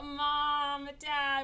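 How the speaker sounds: very loud, high, tearful sobbing wail, "mom" stretched. Retelling a scene where a daughter says goodbye to her parents, imitating a crying girl. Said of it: "the girl is crying, like".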